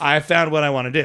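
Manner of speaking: put-on decisive, certain tone. Retelling a daughter's words about her future, imitating a decisive declaration. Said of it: "She said it like".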